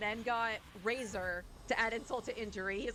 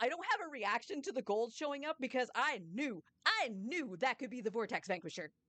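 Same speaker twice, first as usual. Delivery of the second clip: normal talking voice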